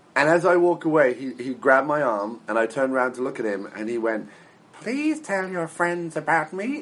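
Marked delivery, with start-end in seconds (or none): 4.8-6.7 high, goofy, silly cartoon bird voice. Retelling how a man grabbed the speaker's arm and spoke in the Big Bird voice. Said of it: "in like the Big Bird voice".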